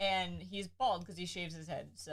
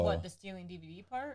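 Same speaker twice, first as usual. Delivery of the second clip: ordinary delivery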